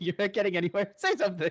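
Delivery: imitated yelling. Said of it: "is yelling".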